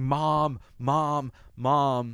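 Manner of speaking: play-acted, strained, mild half-screamed calls. Recounting an episode where a character screams as the phone rings: retelling a scream for mom. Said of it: "and he's screaming".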